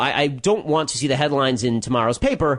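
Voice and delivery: ordinary talk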